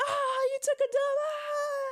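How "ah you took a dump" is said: put-on mocking laughter, higher. Imagining the student body mocking a boy in the hallway: imitating students laughing at someone. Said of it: "and they all start laughing".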